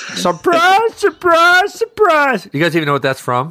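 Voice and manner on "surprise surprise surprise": very high, loud, belted sing-song cry, swooping each word. Echoing a surprise greeting with a catchphrase: Gomer Pyle voice. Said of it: "Does sound Gomer Pyle-y".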